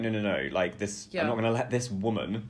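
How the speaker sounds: ordinary talk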